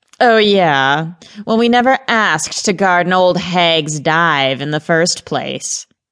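wisecracking tone. Gareth, a gargoyle outside her door, answers Mrs. Grant's taunt; quipping. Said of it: "Gareth quipped".

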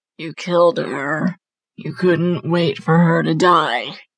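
hideous, ugly, harsh guttural throaty voice. She speaks to Petey, now in a hideous, guttural voice. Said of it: "now in a hideous, guttural voice".

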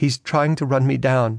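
plain reading voice

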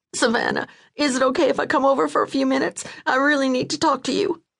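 very high, rushed, tumbling words. Narrating Marty's call to Savannah, reading Marty high-pitched, words colliding. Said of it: "Her voice came out high-pitched, her words colliding into each other".

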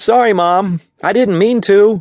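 very high-pitched yelled voice. A boy answers his mom, yelling. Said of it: "he yelled".

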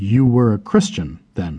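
plain reading voice

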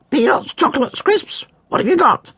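very high, crackly parrot bird voice. Reading a story aloud, the parrot questions Henry's cat in a crackly parrot voice. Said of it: "said the parrot in a crackly voice".

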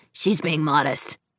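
ordinary delivery

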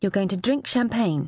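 ordinary talk

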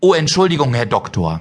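ordinary talk

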